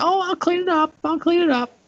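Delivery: very high-pitched woman's voice. Speaker retelling a story, quoting their mom, imitating my mom's voice. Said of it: "That's my mom voice".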